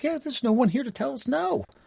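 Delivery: put-on, high, giggly chatter talking through giggles. Retelling what the group said on a class trip: imitating giggling while talking. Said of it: "all of us in there giggling like".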